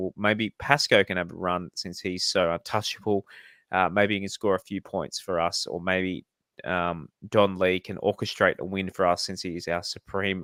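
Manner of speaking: normal talking voice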